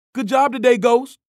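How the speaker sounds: very high, loud yell. Sonny turns around and calls to the narrator as he leaves: yelled. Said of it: "he yelled".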